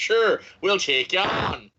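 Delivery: put-on southern Irish accent. Quoting the other speaker's reply to a written-in review: southern irish accent. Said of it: "In a Southern Irish accent?".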